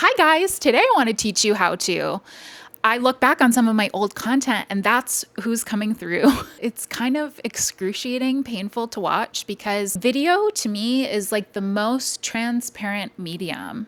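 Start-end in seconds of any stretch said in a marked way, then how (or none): 0.0-2.2 put-on sing-song customer service voice. Speaker shows how people sound when they start recording a video, in a customer service voice. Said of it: "the customer service voice".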